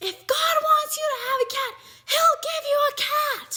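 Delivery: very high exasperated retort. Retelling how Mom answered the boy begging for a cat, retelling an angry mom. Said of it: "my mom was pissed".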